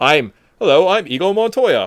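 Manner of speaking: poor put-on British accent. Speaker quotes a line he admits he can't accent properly: bad British-accent Inigo Montoya. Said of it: "I can't do a British accent".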